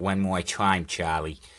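put-on weird, old-timey 1940s New York accent. Asked to say it one more time to Charlie, weird 1940s New York accent. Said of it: "went into some weird 1940s New York accent".

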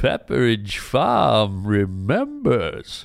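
put-on drawn-out, swooping old man voice. Retelling the closing line of an old commercial, in Pepperidge Farm old man voice. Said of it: "old guy at the end would go".

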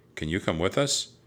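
ordinary delivery

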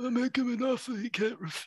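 soft, high mob-boss murmur, said softly. Giving a movie-line clue in a guessing game, Marlon Brando Godfather voice. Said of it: "If I did the accent of the guy".

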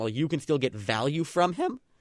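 voice cracking mid-phrase. Discussing whether to trade Zion while you still can: voice cracking. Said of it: "Voice crack, sorry".

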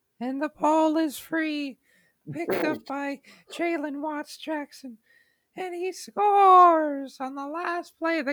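very high, squeaky, playful voice, cracking. Re-enacting a remembered last-play game call, in a squeaky high cracking voice. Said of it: "You sound like Mickey Mouse".

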